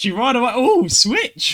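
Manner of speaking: high, loud, excited squeal.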